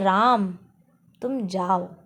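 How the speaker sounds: strong stress on 'राम'. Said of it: "तो राम पे अपन ने वाला घात".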